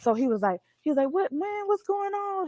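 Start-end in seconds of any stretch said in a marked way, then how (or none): 1.1-2.5 put-on high-pitched old man voice with New Orleans accent. Retelling what a security guard said: imitating an old New Orleans man. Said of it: "He was like a New Orleans old guy".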